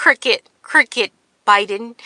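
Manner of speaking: taunting, name-calling jab in campaign-rally speech style. Retelling what Trump calls Biden: imitating Trump. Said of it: "That's Trump. He's like".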